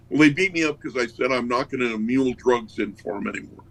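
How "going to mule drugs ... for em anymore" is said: ordinary talk, nothing marked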